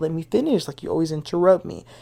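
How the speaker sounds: usual speaking voice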